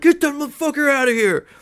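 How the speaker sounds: very high, loud yell. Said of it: "He's, like, yelling".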